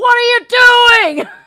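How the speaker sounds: very high, booming, shrill scream, "you" drawn out. Retelling yelling at a phone while a speaker was cut off: imitating own yelling. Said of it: "I was yelling at my phone this morning".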